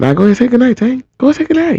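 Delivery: teasing taunt in a high singsong.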